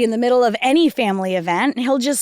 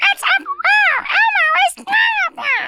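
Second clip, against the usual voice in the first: put-on very high, slow, childlike puppet voice. Urged by a friend to show it, speaker tries an Elmo impression. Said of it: "I had the vocal cords of a child".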